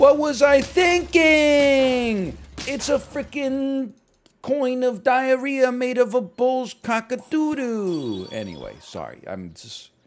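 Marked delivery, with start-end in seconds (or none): 0.0-8.3 loud, high, slow ranting. Announcing the bit himself, he switches into an Angry Video Game Nerd voice. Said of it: "Angry video game nerd voice".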